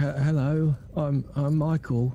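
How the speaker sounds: unconfident voice, without gruffness. Repeating a greeting after a coach who wants the gruff taken out; unconfident voice. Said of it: "Unconfident, yeah?".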